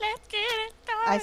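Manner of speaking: goofy, very high, silly, stupid voice. Echoing the call to start the show: stupid voice. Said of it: "I was saying it in a stupid voice".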